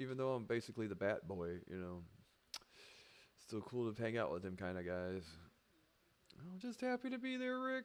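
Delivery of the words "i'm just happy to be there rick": very high-pitched cartoon character voice. Retelling an early experience running with a crew online, in a Rick and Morty character voice. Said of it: "I can't do his voice, Rick and Morty".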